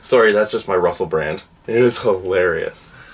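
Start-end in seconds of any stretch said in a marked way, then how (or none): none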